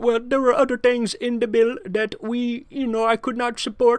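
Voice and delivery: put-on Indian accent. Retelling the excuse a politician gave for voting against a bill, imitating an indian accent. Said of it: "in his Indian accent".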